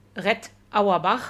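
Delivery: name pronounced with German sounds. Deliberately pronouncing a name the German way, with German pronunciation. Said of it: "spreche einfach den Namen deutsch aus".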